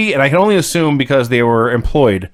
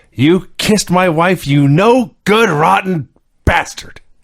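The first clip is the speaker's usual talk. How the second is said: play-acted, seething, furious, high-pitched tirade; 5 semitones higher than usual. Retelling what Ric Flair said to Bischoff: imitating Ric Flair's fury. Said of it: "He's delivered it with such fury".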